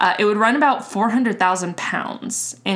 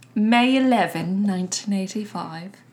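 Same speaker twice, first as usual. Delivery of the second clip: terrible, bad, put-on fake British accent. Host restating a date the british way, in a terrible british accent. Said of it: "if I were to say this in the British manner".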